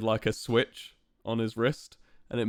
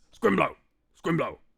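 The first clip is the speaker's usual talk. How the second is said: high-pitched, creaky, tiny little frog voice; 6 semitones higher than usual. Describing a little orange frog fighter, doing the Scrimblow frog voice. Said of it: "That's how he talks".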